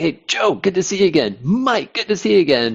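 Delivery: excited, high-pitched tone. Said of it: "he's, like, getting excited".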